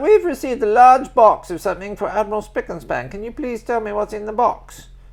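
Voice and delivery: put-on English woman's accent. Retelling what an admiral's english secretary said to him: english lady accent. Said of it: "It's an English lady, so I'll do your accent".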